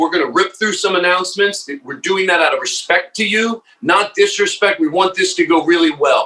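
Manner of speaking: mock firm yet kind, stern but loving announcer tone. Retelling a pre-show announcement to the crowd: strict but loving tone. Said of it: "I'm strict but loving".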